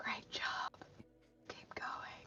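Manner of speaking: barely audible, very quiet, hushed whisper. Voicing Nemi whispering encouragement to Thrykus: whispering in character. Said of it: "Nemi's gonna whisper to Thrykus".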